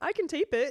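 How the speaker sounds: talking through laughter. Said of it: "Sorry, I'm just laughing".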